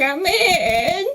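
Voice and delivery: odd put-on old man voice, high, inflection off. Answering a knock at the door, in a put-on old man voice. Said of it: "I say in my best old man voice".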